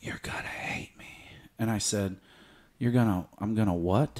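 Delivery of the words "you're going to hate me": imitated whisper, quieter and faster. Retelling what a woman whispered in his ear in the bedroom: retelling a whisper. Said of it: "she whispers in my ear and says".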